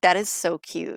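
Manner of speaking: normal talking voice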